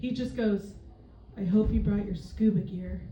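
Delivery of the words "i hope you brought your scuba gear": play-acted, bone-dry, low, flat deadpan delivery. Comedian closing a set by retelling a man's joke to them: retelling his deadpan line. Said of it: "in the most deadpan voice".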